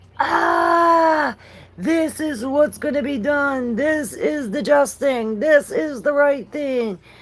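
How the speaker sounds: high yell with long drawn-out "ah". Speaker describing a card's horned figure, imitating the King of Swords screaming. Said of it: "he's screaming like".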